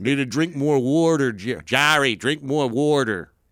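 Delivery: put-on Philly accent. Voicing the talking poop again, speaking to Jerry in a Philadelphia accent. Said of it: "Your poop had a Philadelphia accent".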